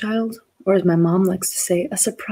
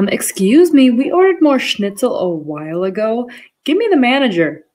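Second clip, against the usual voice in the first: loud, drawn-out, sing-song voice; 4 semitones higher, 6 dB louder than usual. Imagining a German girl at dinner sent back talking like a Karen, mock Karen voice. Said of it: "I send them back a Karen".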